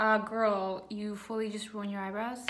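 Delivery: plain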